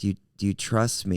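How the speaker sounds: plain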